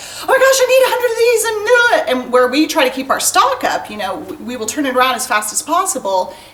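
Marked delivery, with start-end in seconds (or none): 0.0-1.4 high, loud panicked cry. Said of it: "people are panicking and they're like".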